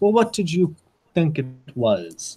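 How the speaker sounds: put-on English spoken in a thick, heavy foreign accent. Narrator voices a woman answering a gentleman, in heavily accented english. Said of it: "in heavily accented English".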